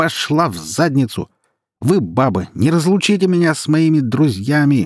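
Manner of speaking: put-on slurred drunken shouting. Reading a man's sudden outburst at a woman, in drunken shouting. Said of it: "продолжал он кричать пьяным голосом".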